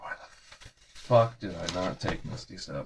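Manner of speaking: soft, unvoiced whisper, self-reproaching.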